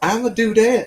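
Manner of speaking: put-on woman's voice. Speaker tries a woman's voice for the first time, in a put-on woman's voice. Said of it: "never tried to do a woman's voice".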